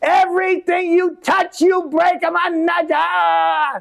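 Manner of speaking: shrill, very high scolding shout, nada stretched. Recalling fuses that didn't work, the speaker imitates their father yelling. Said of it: "my father would yell".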